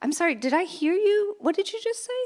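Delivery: very high-pitched, slightly snarky tone. Showing a clueless question to ask a biased coworker: a little snarky. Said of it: "my tone is a little snarky right now".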